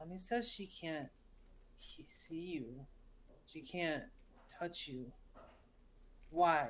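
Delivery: soft, hushed whisper at close range. Game narrator speaking as Sev, close to the player's face: whispering. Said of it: "he says he whispers at you".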